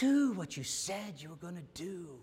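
put-on soft voice, aged a little. Retelling a man in his eighties praying to the Lord, in a little older voice. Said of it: "probably with a little older voice".

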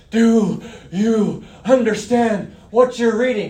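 put-on, mock gasping for breath. Retelling a running man's question to someone reading, imitating gasping for breath. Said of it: "He's gasping".

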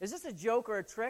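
normal talking voice

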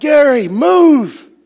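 loud, high-pitched yelling.

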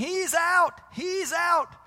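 high, loud shouting.

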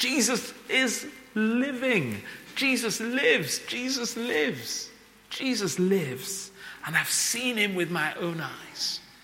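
eager, excited, high-pitched voice. Speaker acting out a woman telling others Jesus lives, imitating her excited voice. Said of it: "you can just hear her excited voice".

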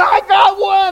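shrill, very high, all-out screaming shout. Retelling catching something in a bag in front of his commanders, retelling his own scream. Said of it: "And I'm screaming".

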